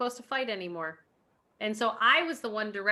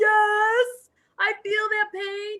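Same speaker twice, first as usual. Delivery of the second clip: very high, drawn-out scream; 12 semitones higher, 7 dB louder than usual. Retelling answering a workout instructor on screen: imitating own screaming. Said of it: "screaming at the screen".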